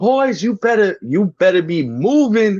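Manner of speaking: put-on shrill, very high, slow, drawn-out shout. Retelling how a coach yelled at slacking runners: imitating a coach yelling. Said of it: "She's yelling at us like".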